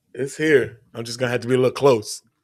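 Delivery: voice almost gone, barely there, close to mic. Answering a co-host after saying their voice is gone: voice almost gone. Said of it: "as you can hear, my voice is gone".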